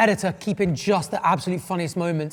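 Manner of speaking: ordinary talk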